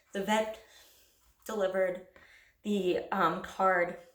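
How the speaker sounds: very slow, broken, halting delivery, choking up near tears. Recalling a pet's paw print card arriving, on the verge of tears.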